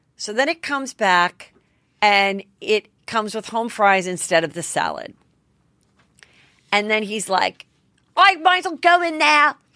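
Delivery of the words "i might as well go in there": put-on English accent in a higher voice. Retelling a rude diner's complaint: imitating James's English accent. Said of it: "with his English accent".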